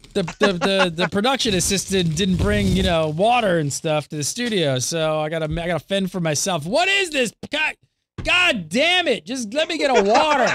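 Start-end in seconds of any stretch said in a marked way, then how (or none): 6.7-10.6 shrill, high-pitched, exasperated, frustrated yelling. Searching for water alone in the studio, frustrated yelling. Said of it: "who am I yelling at?".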